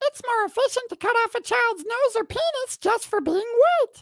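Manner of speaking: very high, cartoon-puppet-like character voice. Reading awkward lines as a lovable children's character, Elmo voice. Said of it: "We could do an Elmo voice".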